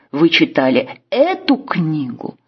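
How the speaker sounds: эту stressed with a wide pitch tune.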